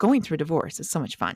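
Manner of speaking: ordinary delivery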